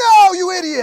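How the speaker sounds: very loud, high-pitched, all-out scream. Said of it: "I like how he screams".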